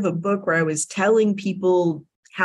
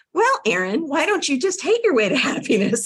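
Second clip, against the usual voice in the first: mock perky, sing-song, disaffected, pitched up; 7 semitones higher than usual. Retelling what a woman said to her on a call, imitating her perky, disaffected tone. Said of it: "in just this perky, disaffected tone that she has".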